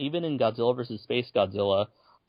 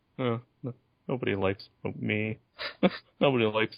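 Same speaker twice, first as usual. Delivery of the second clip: put-on sulky robot voice, quieter; 2 semitones lower, 4 dB quieter than usual. Discussing the monster film with a co-host, imitating Moguera sulking. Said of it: "Mogira's just like he's just like sulking".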